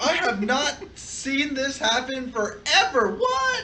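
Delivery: fake astonishment, sarcastic.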